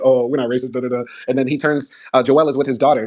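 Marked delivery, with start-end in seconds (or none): 0.0-1.0 put-on, mock flustered voice. Retelling a scene where police answer a racism accusation: imitating flustered police. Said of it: "all flustered".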